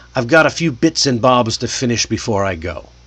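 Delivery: plain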